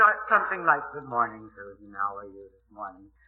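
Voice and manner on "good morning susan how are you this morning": cracked morning voice, very low and quiet. Recalling a morning voice test before going on air, imitating own cracked voice. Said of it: "that cracked voice".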